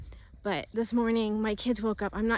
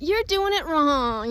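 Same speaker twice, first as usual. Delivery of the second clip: put-on real, high, loud whiny child voice; 6 semitones higher, 8 dB louder than usual. Parent retelling what their eight-year-old daughter said, imitating her whiny voice. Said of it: "in this real whiny voice".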